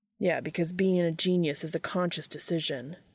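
ordinary delivery

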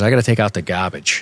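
put-on non-rhotic Massachusetts accent, "garbage" said without R. Describing an uncle's speech, the speaker quotes him in a Southeastern Mass accent. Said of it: "Southeastern Mass, which is like you don't pronounce your R".

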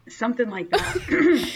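voice cracking high, breaking mid-phrase. Introducing a friend to the audience, voice cracking. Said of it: "my voice just cracked".

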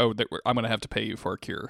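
ordinary talk

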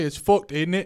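loud, rough, put-on attempt at an Australian accent. Imagining what a girl might say, attempted Australian accent. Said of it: "starts speaking in an Australian accent".

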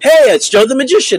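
high, loud, bright, energetic, belted out.

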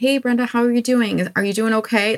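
mock sympathetic tone. Retelling how former coworkers greeted her: imitating a sympathetic coworker. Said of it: "it's meant in a sympathetic way".

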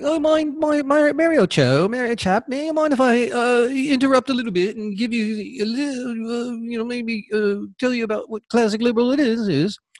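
put-on British accent. Retelling how a fellow poster challenged people online: imitating Monty with a British accent. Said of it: "almost like a British".

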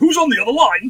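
on-air radio DJ host delivery. Podcast host greeting guests on the other line, like a radio DJ. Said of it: "i sound like a radio dj".

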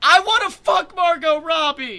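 very loud, very high, drawn-out yell. Acting in a scene, standing and calling after a friend: shouting after someone. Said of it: "shouting after him".

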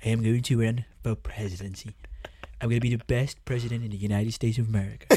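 put-on blustery politician voice. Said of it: "And now imagine that drunk".

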